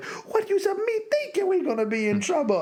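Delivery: very high, swooping panicked creature voice, pitch swinging. Recounting a scene where Jar Jar is losing it in the bongo: imitating panicky Jar Jar Binks. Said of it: "Jar Jar's losing".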